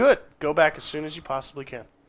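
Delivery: plain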